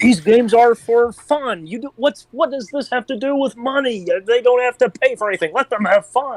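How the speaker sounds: high cartoon frog puppet voice. In a chat with friends, a speaker launches into a Kermit the Frog voice. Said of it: "now you're Kermit the Frog".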